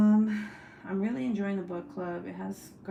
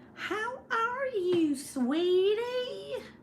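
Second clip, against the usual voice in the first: very high, very slow, "sweetie" stretched out; 14 semitones higher than usual. Imitate how a woman says things, dragging every word. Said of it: "she drags everything, every word".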